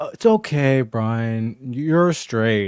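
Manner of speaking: very slow, drawn-out, patronizing, talking-down tone. Speaker retelling a woman's remark to Brian, mock-patronizing. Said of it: "reverse pa- patronizing".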